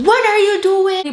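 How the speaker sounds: high-pitched, loud, angry shout.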